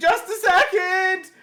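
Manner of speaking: loud, high-pitched yell. Retelling a mishap, the speaker acts out what was shouted: retelling a yell. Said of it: "is is yelling like".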